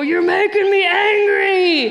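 loud, mock-angry growling bellow. As if you're reenacting how a noisy toy interrupted a quiet family dinner, blasting its grumpy catchphrase again. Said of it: "in the loudest voice".

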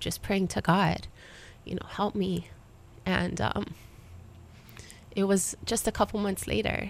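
hushed, soft, deeply emotional, overcome. Sharing her personal story with listeners, getting really emotional. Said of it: "I get really emotional sharing my story".

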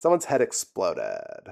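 soft, creaky, crackling vocal fry on every word. Talking with others about a show, demonstrating a voice: vocal fry. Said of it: "That was the vocal fry that I wanted to show you".

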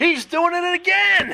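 excited, very high-pitched, drawn-out scream. Retelling a shout from the press box during a game: retelling a scream. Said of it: "I'm screaming in the press box".

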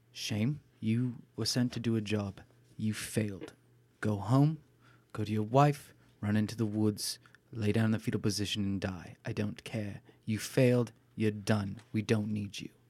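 pitch brought right down, low tone. Roleplaying a character telling someone sent on a job they failed, in a lowered tone. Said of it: "I'll lower my tone".

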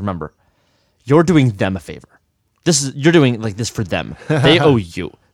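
put-on aggressive speech. Retelling what a woman told a nervous performer after the show: imitating aggressive speech. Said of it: "she said this in a very aggressive way".

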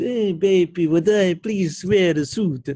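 slow, high coaxing Russian woman. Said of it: "Natalia says".

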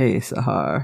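very deep, dropped-down voice. Retelling a scene where a character suddenly greets Sahar: imitating Max's deeper voice. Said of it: "Did his voice just get deeper?".

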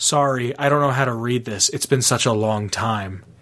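acted smug attitude. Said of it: "with the smuggest fucking".

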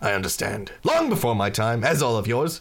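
normal talking voice

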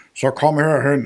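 a hint of storybook pirate voice. Explaining how to tell a story, the speaker demonstrates a line in a pirate voice. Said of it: "jeg lyder bare lidt som en sørøver".

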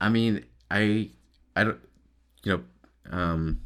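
halting, stuttering speech. Talking to a listener about hanging out with buddies, stuttering. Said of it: "I'm stuttering too much".

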